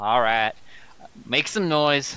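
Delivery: slow, weary, resigned sighing delivery. Voicing a character who gives in to another's plan: sighing in character. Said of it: "She's just gonna kinda, like, sigh".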